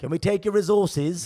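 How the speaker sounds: high-pitched put-on British accent. Mocking colonizers asking politely for resources: imitating a British accent. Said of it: "with that accent, with that sound".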